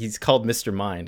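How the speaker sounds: usual speaking voice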